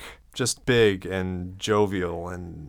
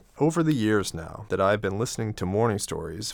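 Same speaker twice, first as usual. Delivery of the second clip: ordinary delivery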